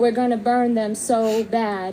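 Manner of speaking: normal talking voice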